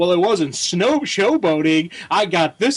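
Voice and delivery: put-on oily, smug, self-satisfied hero voice. Retelling how a comic line read in the head: smarmy Superman voice. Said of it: "I kept reading Superman with a smarmy voice".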